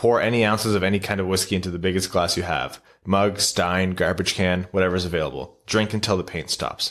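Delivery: normal talking voice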